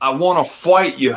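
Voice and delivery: put-on Australian accent. Describing a wrestler demanding a championship match, in Rhea Ripley's Australian accent. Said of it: "in that Australian accent".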